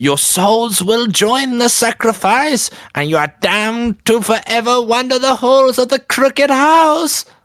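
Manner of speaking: very high, shrill, screeching hag shriek. Game narrator voices the hag lunging at the four players: shrill shrieking hag voice. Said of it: "she shrieks in a shrill voice".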